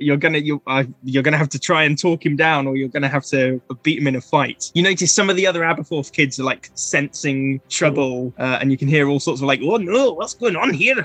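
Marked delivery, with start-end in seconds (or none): 9.6-11.0 higher-pitched Scottish mumbling. Narrating to players, voicing worried kids in the background, in scottish mumbling. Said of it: "general Scottish mumbling".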